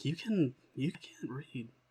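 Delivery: slow, very quiet, hushed sideways half-whisper. Speaking aside to Avil in character: half-whispering to Avil. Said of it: "I'm just kinda whispering to Avil".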